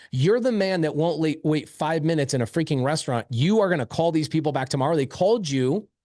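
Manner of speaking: ordinary talk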